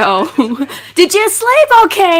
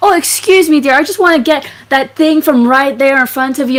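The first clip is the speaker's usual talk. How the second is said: loud, breezy, fake casualness. A player acts out her character reaching past someone, pretending to be casual. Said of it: "like I'm pretending to be casual".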